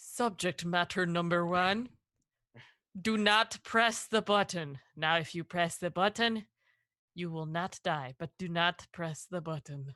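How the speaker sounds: very low, dropped, deep put-on announcer voice. Playing an observer speaking through the glass to a subject: deep voice. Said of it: "Everybody get your deep voice on".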